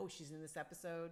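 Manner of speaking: ordinary delivery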